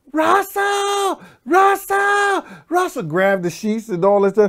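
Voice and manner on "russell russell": very high-pitched shrieked cry of alarm. Retelling how a man screamed for russell when a gun came out: retelling a scream. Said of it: "the motherfucker just screamed".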